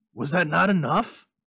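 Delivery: loud, fierce, pressing tone. A man answers a woman who wants the other two wishes, demanding fiercely. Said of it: "He demanded fiercely".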